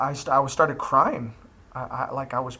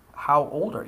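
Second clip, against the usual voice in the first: put-on severe, stern, angry tone. Retelling asking a girl her age again: retelling own stern angry question. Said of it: "very sternly and angry".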